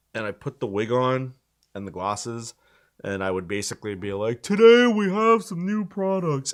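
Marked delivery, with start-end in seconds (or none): 4.4-6.5 keynote announcer voice, very high. Reenacting an impression from an earlier video: Tim Cook impression. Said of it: "practice my best Tim Cook impression".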